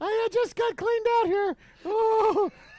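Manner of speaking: high-pitched, loud squeaky voice. Teasing Rob in a group conversation: Mickey Mouse impression. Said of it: "my best Mickey Mouse".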